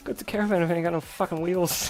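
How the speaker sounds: thick put-on Irish accent. Answering a request for a movie accent: Brad Pitt's Snatch accent. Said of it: "Change it to that accent Brad Pitt had in Snatch".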